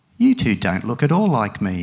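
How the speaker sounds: ordinary delivery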